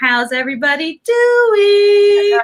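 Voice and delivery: very high, loud, stretched-out, drawn-out delivery. Recalling how someone greets a chat: imitating Cachet. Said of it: "I think of Cachet going".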